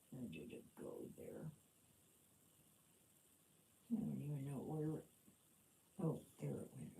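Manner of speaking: quiet mumbling to oneself. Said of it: "I'm mumbling to myself".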